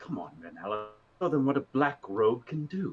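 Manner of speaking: muttered whisper under breath. Voicing a character urging on renala in combat: whispering under his breath. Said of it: "he's going to whisper a little bit under his breath".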